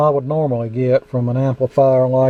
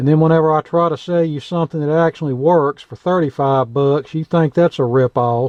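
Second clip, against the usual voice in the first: ordinary delivery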